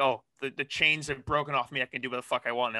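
ordinary delivery

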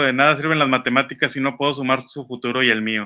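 ordinary talk, nothing marked

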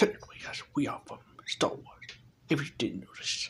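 put-on deep voice, hushed, near whisper. Answering whether they are from star wars, in a deep voice. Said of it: "Why is your voice so deep?".

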